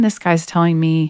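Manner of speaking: plain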